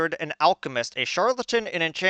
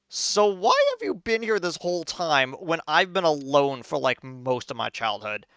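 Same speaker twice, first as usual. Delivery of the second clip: ordinary delivery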